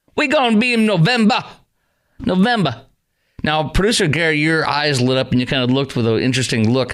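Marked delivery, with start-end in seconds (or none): 0.2-2.9 imitated Detroit accent, higher pitch. Repeating a played line back, imitating a Motor City accent. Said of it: "Is that a total accent right there?".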